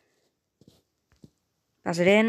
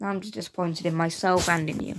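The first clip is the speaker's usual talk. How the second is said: ordinary delivery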